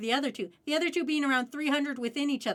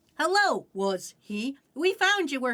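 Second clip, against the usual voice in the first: put-on synthetic robotic voice, reading aloud; 3 dB louder than usual. Complaining that app voices get her name wrong, the speaker mimics the TikTok text-to-speech voice. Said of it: "it's like the fucking like TikTok voice".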